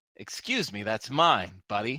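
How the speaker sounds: scowling tone. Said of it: "he has a scowl".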